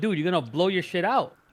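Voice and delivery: ordinary talk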